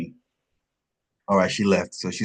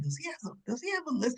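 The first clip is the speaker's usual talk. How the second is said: soft, hushed, wondering, under the breath. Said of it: "I'm like".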